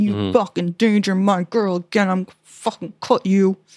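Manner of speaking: put-on fired-up, menacing warrior voice. Retelling a scene where she threatens him about her girl: imitating a threat. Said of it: "threatens him about it".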